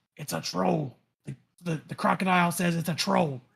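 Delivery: whispered delivery. Whispering news in character to allies: whispering to allies. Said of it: "I'll whisper back to, to, uh, my allies".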